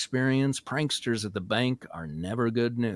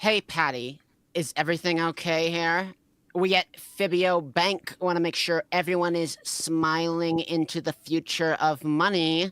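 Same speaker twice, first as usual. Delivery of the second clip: catty character tone; 6 semitones higher than usual. Playing Sarah checking on Patty with a customer, in the bitchiest tone she can muster. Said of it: "in the bitchiest tone she could muster".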